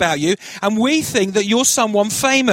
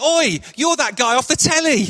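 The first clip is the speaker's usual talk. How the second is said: imitated very loud calling-out voice; 3 semitones higher than usual. Recalling a checkout lady at Morrison's recognizing him; imitating a very loud voice. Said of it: "she in a very loud voice".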